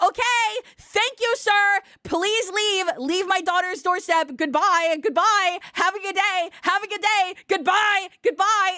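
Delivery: slow, deliberate, motherly voice. Retelling a parent on speakerphone sending a doorstep solicitor away: imitating my mom. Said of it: "my mom over the speaker said".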